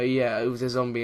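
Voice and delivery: normal talking voice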